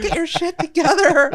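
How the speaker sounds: put-on scolding yell, pitched very high. Recalling yelling at her fiance during a match, retelling her own yelling. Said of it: "I was yelling at my fiance".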